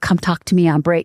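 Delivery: put-on whisper. Retelling someone peeking into an office, waving a resume: imitating Richard Paul Evans whispering.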